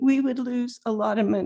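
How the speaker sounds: usual speaking voice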